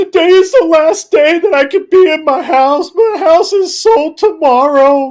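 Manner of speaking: put-on very high, tearful whine sobbing through words. Mocking people who film themselves crying in their car, mock crying while talking. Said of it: "crying and saying".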